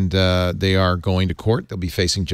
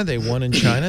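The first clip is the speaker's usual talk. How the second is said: normal talking voice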